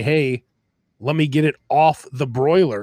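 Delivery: ordinary talk, nothing marked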